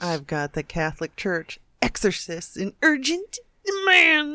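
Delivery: hammy theatrical delivery. Announcing a news item about exorcists in urgent demand: overacted delivery. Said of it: "or was that just overacting?".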